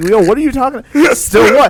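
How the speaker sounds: play-acted exasperated, annoyed, thrown-off, baffled tone. Acting out a confused reply to someone's slang: acting out getting upset. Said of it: "I would get upset".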